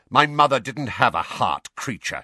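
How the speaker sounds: snapped, immediate retort. Sirius replies to creature's muttered remark, snapped. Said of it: "snapped Sirius".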